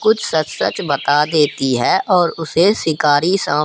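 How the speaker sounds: plain reading voice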